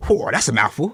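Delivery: put-on speech in a New Zealand accent. Retelling a teacher reacting to a hard surname: imitating a New Zealand accent. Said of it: "I just remember the accent".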